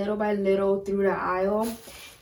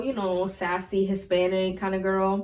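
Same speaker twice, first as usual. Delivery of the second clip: normal talking voice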